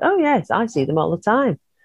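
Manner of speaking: dry, matter-of-fact, deadpan delivery. Retelling someone's calm reply about the hooded figures: imitating a deadpan reply. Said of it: "absolutely deadpan".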